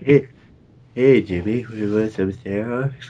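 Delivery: put-on cartoonish kid voice. After another speaker's cartoon reference, acting out the scene in South Park kid voice. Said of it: "you sounded like this kid from South Park".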